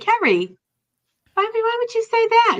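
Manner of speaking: put-on very high, disappointed voice with Boston accent. Quoting what her mom, who is from Boston, would say, in a Boston accent. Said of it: "in her Boston accent".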